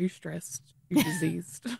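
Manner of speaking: hushed whisper, voice dropped right down. Acting out someone asking health questions, in a lowered, hushed voice. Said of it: "lowers voice".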